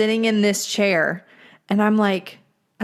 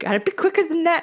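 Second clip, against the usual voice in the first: put-on high-pitched old fisherman voice; 8 semitones higher than usual. Recalling a commercial where an old man teases with a dollar bill: imitating an old man in a fishing outfit. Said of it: "with the old man in the fishing outfit".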